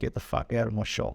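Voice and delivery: ordinary delivery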